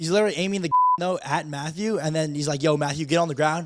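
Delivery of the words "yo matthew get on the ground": ordinary delivery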